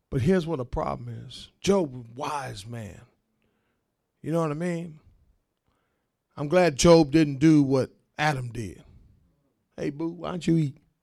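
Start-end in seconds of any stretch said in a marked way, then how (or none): 9.7-10.7 sugary, sweet, eager-to-please coaxing plea. Imitating Adam coaxing his woman: imitating a passive man pleasing his woman. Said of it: "Passive man. Trying to please his woman".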